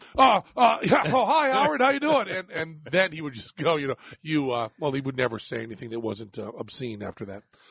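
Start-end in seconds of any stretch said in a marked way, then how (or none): 0.6-2.3 high, loud, startled, eager, flustered voice. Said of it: "hear me go".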